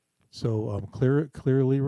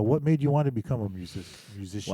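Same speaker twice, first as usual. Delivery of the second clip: plain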